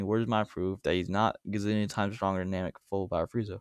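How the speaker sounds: usual speaking voice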